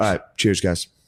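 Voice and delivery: casual, trendy hipster waiter voice. Mimicking hipster waiters who love saying cheers: imitating a hipster waiter. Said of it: "Hipster, hipster waiters love going".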